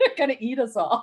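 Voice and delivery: words breaking up with laughter. Explaining a movie joke to another speaker, laughing while talking. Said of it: "I'm laughing too much and I can't even talk".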